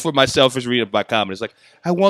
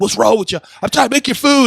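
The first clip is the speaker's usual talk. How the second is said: snippy, sharp tone, pitched very high; 10 semitones higher than usual. Recounting a film scene where Brad Pitt gives his dog attitude, mock-snippy. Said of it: "He was giving his dog attitude".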